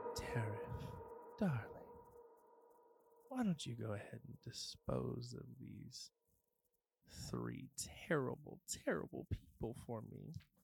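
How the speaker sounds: very quiet, hushed whisper, barely there. A game master voices a whisper in a player character's head, in a whispering voice. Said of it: "And you hear a whisper in your head".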